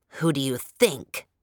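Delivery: low, hissing voice. An old man answers Sapana's question, hissed. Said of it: "he hissed".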